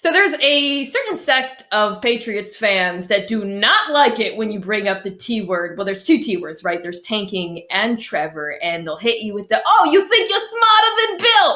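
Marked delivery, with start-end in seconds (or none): 9.7-11.6 very high-pitched put-on Boston accent. Imitating Patriots fans who push back on tanking talk: put-on Boston accent. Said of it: "trigger warning for my Boston accent".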